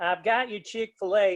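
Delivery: put-on American Southern accent. Retelling what a woman said, in her voice: southern accent. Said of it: "with a Southern accent".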